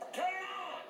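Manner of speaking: high, angry shout.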